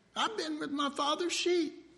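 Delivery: put-on very high, youthful, boyish lad's voice. Speaker retelling the David story acts out David's reply, in a young voice. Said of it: "Hear that young voice?".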